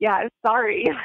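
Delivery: plainly insincere, sarcastic. Retelling walking over to apologize to an upset fan: imitating own sarcastic apology. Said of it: "I was so sarcastic".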